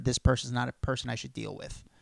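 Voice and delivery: ordinary talk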